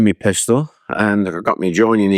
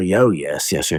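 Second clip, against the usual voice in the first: slow, jolly colonial British officer voice; 3 semitones lower than usual. Retelling how a British general talked to the speaker, jolly colonial officer voice. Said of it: "jolly colonial".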